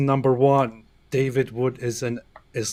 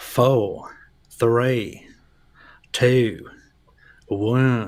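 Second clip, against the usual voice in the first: put-on Southern drawl, very drawn out and slow; 4 dB louder than usual. Counting down until a deletion finishes, in a put-on southern accent. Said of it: "is that supposed to be a southern, a southern accent".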